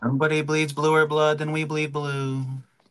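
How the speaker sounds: put-on 80s sitcom nerd voice. Doing an impersonation while talking about the Colts, in an 80s sitcom nerd voice. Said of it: "sound like an 80s like nerd in a sitcom".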